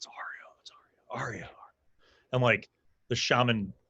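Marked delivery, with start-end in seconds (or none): 0.0-1.5 very quiet, hushed whisper. Voicing guards who spot a returning visitor: whispering guards.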